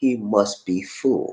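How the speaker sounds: very slow, soft, slowed-down delivery.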